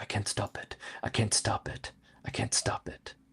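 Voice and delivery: mumbled under breath. Voicing the character Shafak during a shared story game, muttering under his breath. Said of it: "Shafak is muttering under his breath".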